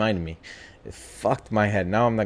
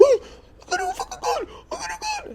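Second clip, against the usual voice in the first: put-on scared, girlish high voice, higher. Retelling a friend's panic in the dark woods: imitating a friend's scared high voice. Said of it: "His voice turned into, like, a girl".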